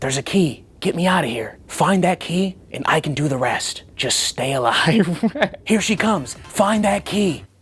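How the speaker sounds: voiced stage whisper. Retelling what a guy in the next room says: imitating a whisper. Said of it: "he starts whispering things like".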